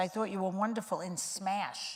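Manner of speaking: ordinary delivery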